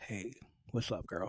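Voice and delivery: very soft, breathy ASMR-style whisper. Showing how whispering could sound like chatting up a girl: mock whispering. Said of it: "whispering is like you make it sound like I'm".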